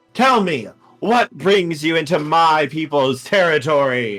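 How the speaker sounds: proud winged ruler voice. Voicing the Emperor of the Green greeting visitors to his woods: Emperor of the Green voice. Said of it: "As he flares out his wings".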